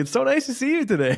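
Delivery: playful, jokey, very high-pitched. Retelling a greeting to a student who disliked them: imitating own joking tone. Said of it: "I get jokingly almost".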